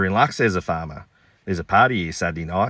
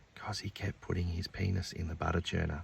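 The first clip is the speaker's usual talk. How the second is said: very quiet, hushed whisper; 14 dB quieter than usual. Reading a joke aloud, dairy farmer Bob answers Joe's question in a whisper. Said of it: "he whispers".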